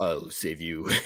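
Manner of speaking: put-on really deep, soft voice. Showing how they read the baby's line, in a really deep voice. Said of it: "like a really deep".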